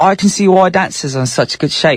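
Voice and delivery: put-on British accent. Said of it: "you guys know why I did the accent".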